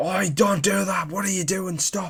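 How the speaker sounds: acted, very high, loud, shrill shouting. Retelling a stranger yelling at a friend climbing down a pole: imitating someone shouting. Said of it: "this guy started shouting at him".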